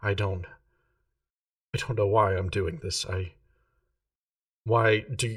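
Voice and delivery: tearful, faltering, stumbling voice. Voicing a character who is walking away in tears: tearful. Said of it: "there's a couple more tears falling down her face".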